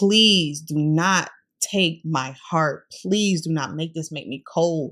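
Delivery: tearful, crying, pleading tone. Retelling a past prayer on her knees: imitating her own tearful prayer. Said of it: "I'm talking boohoo, crying".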